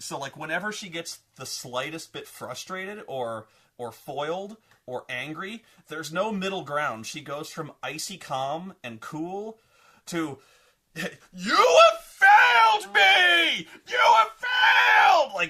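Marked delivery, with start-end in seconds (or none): 11.0-15.5 mock very loud, slow, shrill overacted screaming rage. Describing a character who snaps from calm, mock screaming rage. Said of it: "Like just screaming, scenery-chewing rage".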